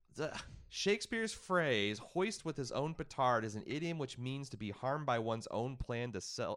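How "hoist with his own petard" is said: ordinary delivery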